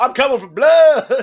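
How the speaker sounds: loud, high, shouted fake country accent. Mocking a segment, one speaker quotes Brock Lesnar in his fake country accent. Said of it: "a really fake country accent now".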